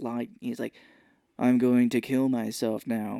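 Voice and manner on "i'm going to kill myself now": put-on deadpan comedian delivery. Retelling a comedian's scene with a gun on a payphone, deadpan like Steven Wright. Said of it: "he has a really deadpan sense of humor".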